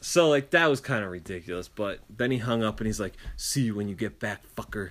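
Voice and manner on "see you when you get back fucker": mock menacing voice, lower and quieter. Retelling a caller's parting words after hanging up: imitating a threatening tone. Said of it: "it's so threatening".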